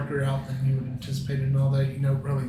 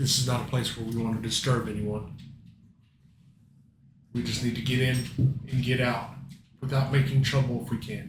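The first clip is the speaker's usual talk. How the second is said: steady, calm, commanding captain voice; 2 semitones lower than usual. A ship's leader explains that they must slip in and out quietly without disturbing anyone. Calm and commanding. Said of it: "So [name], standing behind [name] as he's looking down at it and saying, / "I need you to cut off everything that's keeping the ship afloat. Go ahead and drop it into the water so that we can come up".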